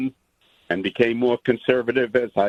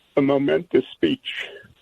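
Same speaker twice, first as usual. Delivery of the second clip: choked-up, emotional voice catching; 3 semitones higher than usual. Calling in to praise a speech, choked up with emotion. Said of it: "I'm gonna get choked up".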